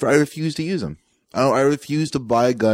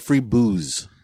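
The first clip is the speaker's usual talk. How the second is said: ordinary talk, nothing marked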